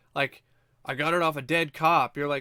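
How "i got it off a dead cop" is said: put-on nonchalant, matter-of-fact, offhand delivery. Retelling a movie character's line about a key card: imitating a nonchalant line. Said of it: "so nonchalant and matter of, matter of fact".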